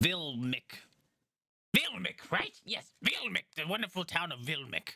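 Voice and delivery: goblin character voice. Voicing Gaxi the goblin greeting the approaching party: Gaxi the goblin voice. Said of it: "He's like".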